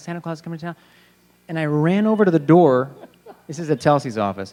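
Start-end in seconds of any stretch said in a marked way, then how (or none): 0.0-0.7 put-on panicked, frantic blurt, totally losing it. Retelling an audition room moment: imitating own freaking out. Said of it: "I started freaking out".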